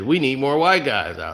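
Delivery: ordinary delivery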